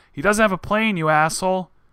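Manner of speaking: put-on big, booming, high-pitched yell. Reading a news report aloud, retelling a courtroom outburst: booming yell, retold. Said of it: "stood up and yelled in a booming voice".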